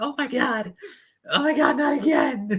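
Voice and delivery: put-on very high, drawn-out blubbering sob. Imitating players waking up on a flight after a loss: mock crying. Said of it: "wake up crying".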